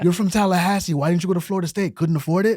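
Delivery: loud, mock-jeering, taunting heckle. Retelling heckling a center fielder for three innings, the speaker re-creates screaming at him. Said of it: "I'm screaming at him".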